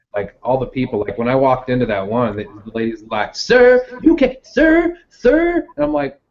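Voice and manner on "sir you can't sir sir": very high, very slow, drawn-out angry woman's voice. Recalling a Goodwill staff member confronting him while recording, imitating an angry store lady. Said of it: "They're like angry women".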